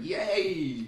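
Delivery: high-pitched sarcastic cheer with fake joy.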